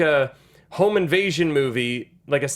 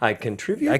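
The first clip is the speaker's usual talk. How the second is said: questioning rise lilting up on "contribute to"; 5 semitones lower than usual. Echoing the other speaker's phrasing, imitating a questioning rise. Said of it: "said that like a question mark".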